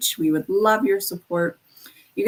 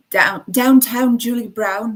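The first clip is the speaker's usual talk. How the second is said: put-on British accent; 3 semitones higher than usual. Listing nineties radio personalities, saying one name: british accent. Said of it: "that's my British accent".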